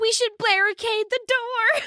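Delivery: slow, very high-pitched, drawn-out shout. Voicing a character's line during a combat turn: yelling. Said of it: "Ashley just yells".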